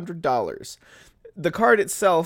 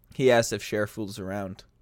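normal talking voice

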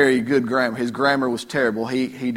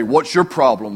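rude, brash voice, louder; 4 dB louder than usual. Retelling a preacher's reply to the English man: imitating a rude, brash retort. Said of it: "They say he was very rude".

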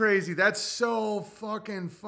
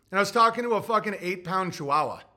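ordinary delivery

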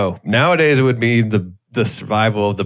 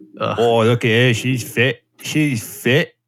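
put-on British Cockney accent. Mocking how the british say someone is fit, in a cockney accent. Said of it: "I hate that accent so much".

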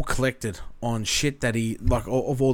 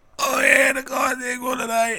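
put-on intense voice, much higher; 13 semitones higher than usual. Describing to co-hosts how a man talks after a game, imitating his intense voice. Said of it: "that impression you just did then".

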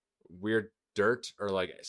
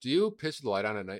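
ordinary talk, nothing marked

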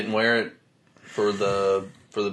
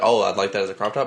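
ordinary talk, nothing marked

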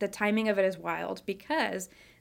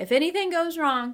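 put-on jokey, lighthearted delivery, raised pitch; 8 semitones higher, 7 dB louder than usual. Recalling a remark made during pregnancy, retelling a joking remark.

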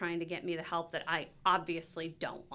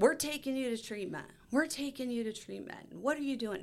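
mock yelling, puffed up; 6 semitones higher than usual. Retelling her mother bursting through the door to confront her, retelling a puffed-up yell. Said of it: "She was yelling at Mark".

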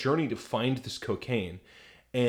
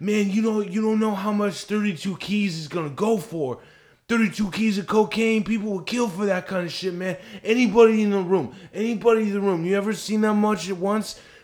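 put-on druggy slur, much higher, louder; 9 semitones higher, 5 dB louder than usual. Retelling a story, imitating how a man spoke: druggy, slurring his words. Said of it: "He had like a druggy ... slurring his words".

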